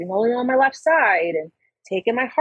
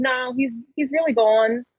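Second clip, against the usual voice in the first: normal talking voice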